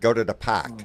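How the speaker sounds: put-on loud, thick Boston accent, laid on heavy. Imitating how a woman talked on the phone, in heavy Boston accent. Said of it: "She had a heavy Boston accent, very heavy".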